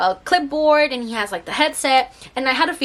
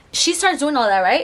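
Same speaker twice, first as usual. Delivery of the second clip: ordinary talk, nothing marked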